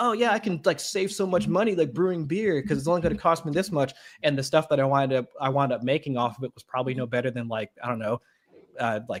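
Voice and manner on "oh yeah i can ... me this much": mock sales-pitch voice, trying to sell. Retelling pitching the hobby to a wife: imitating own past pitch. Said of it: "that was my voice to my wife when I first pitched her".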